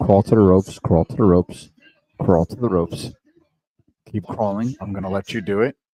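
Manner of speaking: put-on whisper. Watching wrestling, the speaker acts out John talking to Cody, retelling a whisper. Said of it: "He's whispering".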